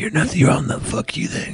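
mock under-breath mutter. Retelling what a crazy man nearby said: retold muttering under breath. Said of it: "Just under his breath talking hellish shit".

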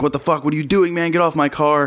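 acted-out furious yelling, high-pitched and angry. Retelling how a car's owner rushed at the speaker; retelling a scream. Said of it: "screaming like".

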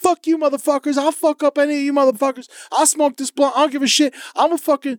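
play-acted, very high, shrill yelled tirade. Retelling guys on a train yelling at an old man: imitating someone yelling.

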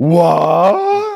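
high, loud, shouted what in disbelief. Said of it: "should I rephrase this as".

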